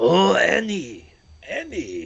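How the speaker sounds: sing-song character voice with wildly swooping pitch. Naming a friend's favorite character, then doing a Watto impression. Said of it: "That's my impression of Watto".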